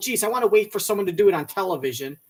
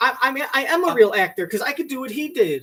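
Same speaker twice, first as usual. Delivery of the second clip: ordinary delivery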